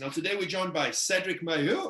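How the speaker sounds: voice shooting up unexpectedly, high-pitched. Show host introducing today's guest by name, voice going high. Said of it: "my voice went so high there".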